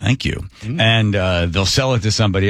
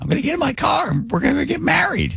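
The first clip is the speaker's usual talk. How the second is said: put-on swooping, high, sing-song elderly woman's voice. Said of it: "make it sound like he's an old lady".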